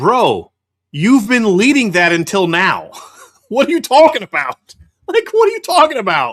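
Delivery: loud, helpless laughter, pitch swinging wide. Reacting to a tweet just read, laughing while talking. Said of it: "I'm sorry laughing".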